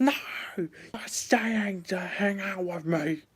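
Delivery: put-on high-pitched screaming at the top of lungs. Retelling how an ex yelled when told of going to sleep: imitating someone screaming. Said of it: "She would scream at the top of her lungs".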